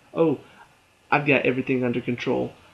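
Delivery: ordinary talk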